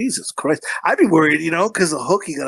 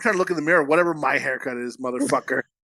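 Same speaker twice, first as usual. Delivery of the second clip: ordinary talk, nothing marked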